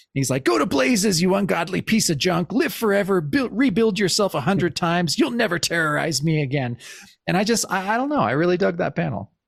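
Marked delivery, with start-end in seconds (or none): 0.4-6.7 put-on angry comic character voice. Describing a comic panel where Hank gets really angry, imitating an angry Hank. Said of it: "he gets really angry".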